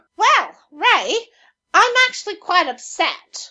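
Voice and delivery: high-pitched, slow, quacky duck-like voice. Greeted as [name] and asked about Twitter, answering in a duck-like put-on voice. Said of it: "I don't know why I sound like a duck".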